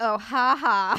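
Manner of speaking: loud, dry, super sarcastic little ha ha laugh. Imitating a lady answering something rude: imitating a sarcastic laugh. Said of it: "she's being super sarcastic".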